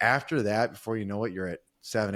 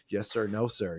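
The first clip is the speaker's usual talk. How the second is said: mock meek, submissive, deferential voice. Retelling how one talked to a boss at work: imitating a submissive employee. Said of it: "that was that submissive thing".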